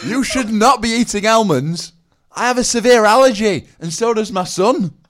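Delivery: put-on very high, very loud scolding, Rotherham Northern English accent. Retelling a lady who started yelling at her, in a Rotherham-style Northern English accent. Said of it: "She sounds like a Wallace and Gromit character".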